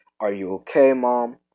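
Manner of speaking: plain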